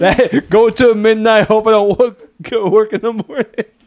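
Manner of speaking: put-on Brooklyn accent. Redoing a movie tagline when asked, in a Brooklyn accent. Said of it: "why did you say that like, like a Brooklyn accent?".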